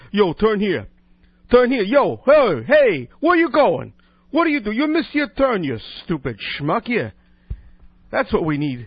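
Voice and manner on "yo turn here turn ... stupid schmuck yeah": loud, swooping Brooklyn accent, drawn-out "hey". Demonstrating the Brooklyn voice he says they need, in a Brooklyn accent. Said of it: "what they need is a Brooklyn voice".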